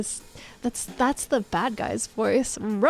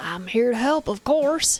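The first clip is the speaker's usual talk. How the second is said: put-on Southern accent. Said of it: "I'll just make him Southern".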